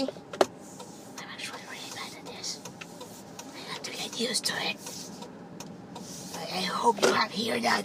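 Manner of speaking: soft, barely voiced whisper.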